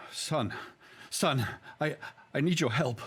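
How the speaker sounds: unhinged, completely out of his mind, high-pitched delivery. His blood-covered character approaches a police officer for help, completely out of his mind. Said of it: "out of my mind sort of thing".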